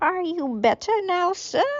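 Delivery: very high put-on elderly lady voice. Reading a story aloud, voicing a character as an old woman. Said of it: "old woman. I did an old man. I can do an old woman".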